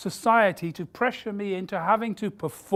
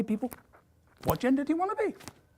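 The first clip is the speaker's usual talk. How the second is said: mock grand, proclamation-style declaiming. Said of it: "we're now beginning to say".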